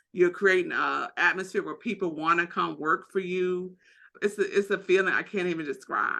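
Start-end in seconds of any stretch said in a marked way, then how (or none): 4.2-6.2 moved, emotional delivery with swooping pitch. Talking with another speaker, getting a little emotional. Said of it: "I'm getting a little emotional".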